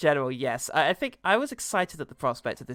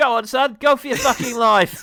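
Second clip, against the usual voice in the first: higher, louder mock regional British accent; 10 semitones higher, 10 dB louder than usual. Joking about a regional british accent in a porno: put-on regional british accent. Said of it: "where someone's got a regional British accent".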